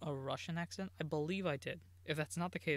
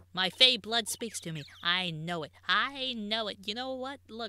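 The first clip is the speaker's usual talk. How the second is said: put-on old-bag voice, louder; 6 semitones higher, 10 dB louder than usual. Naming the killer in a mystery, the speaker suddenly sounds like an old bag. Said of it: "I sound like old bag right now".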